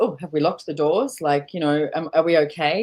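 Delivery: ordinary talk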